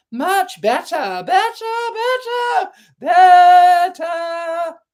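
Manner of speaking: very high, loud squeak. The queen answers Alice after crossing the brook; voice rising to a squeak. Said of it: "her voice rising to a squeak".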